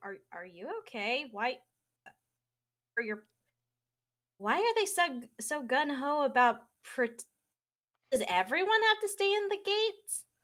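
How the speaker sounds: worried, concerned. Voicing a character who asks if someone is okay: concerned. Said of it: "She's, like, concerned".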